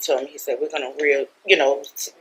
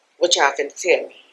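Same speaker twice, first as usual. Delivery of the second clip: plain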